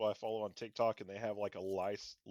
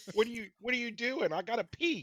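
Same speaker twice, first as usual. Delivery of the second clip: put-on dog voice yelling, higher and louder; 13 semitones higher, 5 dB louder than usual. Voicing another speaker's dog that needs to go out: put-on yelling dog voice. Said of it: "He sounds like he's yelling at you".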